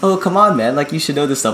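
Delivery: light playful joking. Retelling what he said during a mix-up, retelling a joking remark.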